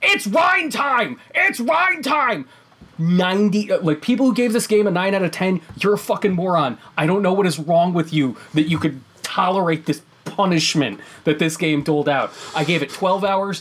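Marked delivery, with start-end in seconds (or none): 0.0-2.5 very high, shrill, shrieking shout. Quoting what a man yells, imitating someone yelling. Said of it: "and he yells".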